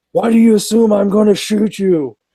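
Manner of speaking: irritated police officer voice, high-pitched. Retelling how a cop reacted to a joke, imitating the angry cop. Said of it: "the cop got like super pissed".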